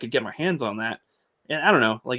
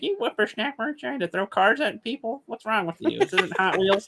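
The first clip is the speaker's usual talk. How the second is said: put-on very high voice of a really old lady; 10 semitones higher than usual. Imagining a funnier version of a movie scene: really old lady voice. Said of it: "a really old lady, be like".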